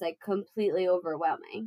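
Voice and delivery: ordinary talk, nothing marked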